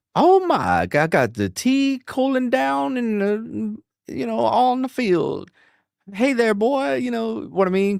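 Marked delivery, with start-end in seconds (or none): 0.2-7.0 slow, high, stretched-out Southern Mississippi accent, not Cajun. Describing how Rogue should sound, the speaker does Rogue's Mississippi Southern accent. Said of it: "but that that Mississippi".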